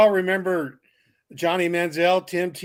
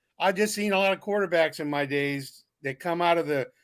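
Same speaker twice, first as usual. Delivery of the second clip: normal talking voice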